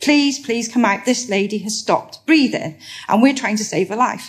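acted pleading, begging tone. Retelling pleading with the call handler for an ambulance: imitating own past pleading. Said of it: "I was pleading and begging the call handler".

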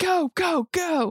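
mock, very high, frantic, panicked shrieking. Acting out a panicking woman in a car, retelling panicked screaming. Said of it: "So she's screaming".

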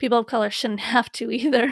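speech breaking into a laugh partway through.

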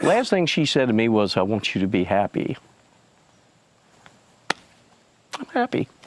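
speaking through tears. Repeating the last thing she said to him, crying while talking. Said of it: "Because you're crying".

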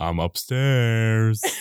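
dropped, deep, low voice. Introducing the next big entry on their list, quoting a movie: Deuce Bigalow movie quote voice. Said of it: "I did not expect that voice from you".

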